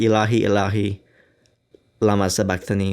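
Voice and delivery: ordinary talk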